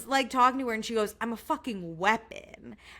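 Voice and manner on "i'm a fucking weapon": slow, bold, whole-chest, fully committed proud declaration. Quoting a reality show contestant's boast: imitating Chloe Burrows saying it with her whole chest. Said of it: "genuinely said it with her whole chest".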